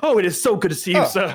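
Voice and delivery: overenthusiastic, gushing character voice. Voicing a character shaking a mentor's hand aggressively: overenthusiastic in-character greeting. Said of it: "just shake his hand aggressively".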